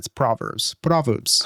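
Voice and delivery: accent from the Middle East. Saying a word the Middle Eastern way after the American way: put-on Middle Eastern accent. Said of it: "I do it Middle Eastern".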